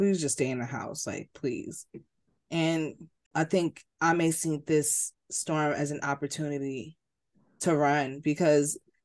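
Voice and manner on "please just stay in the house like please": mock begging, quieter. Retelling how his mother begged him to stay in the house, imitating her begging. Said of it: "his mother begged him".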